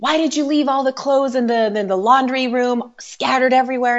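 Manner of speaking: mock, high, accusing scolding tone. Retelling how mom scolded about the laundry room: imitating mom yelling. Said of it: "she was, like, yelling at me".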